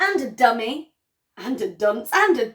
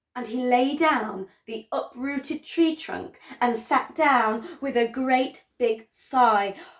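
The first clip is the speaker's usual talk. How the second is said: plain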